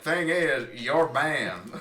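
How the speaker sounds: heavy, laid-on, thick, slow Southern drawl. Retelling how Nozabor cut him off on a Mumble server, imitating Nozabor's Southern drawl. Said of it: "he had this like really thick Southern drawl".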